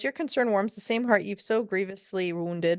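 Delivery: ordinary delivery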